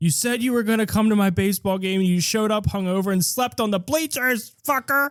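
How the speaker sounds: high-pitched angry yelling. Acting out a character yelling at his dead dad's corpse: acted yelling at a corpse. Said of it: "you're yelling at the corpse".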